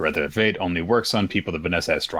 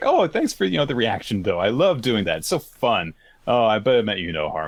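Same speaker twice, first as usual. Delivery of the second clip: put-on happy voice, pitched higher; 5 semitones higher than usual. Acting out Gowther's next lines from the chapter: happy Gowther voice. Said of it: "then he starts acting all happy".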